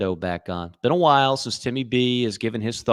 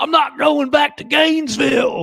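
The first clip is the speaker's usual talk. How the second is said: terrible put-on Southern accent, very high and loud; 6 dB louder than usual. Mocking an actor's film line, doing Keanu's bad Southern accent. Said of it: "in the worst Southern accent perhaps of all time".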